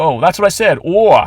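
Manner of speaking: put-on thick old-lady New York accent. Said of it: "an old lady with a heavy New York accent".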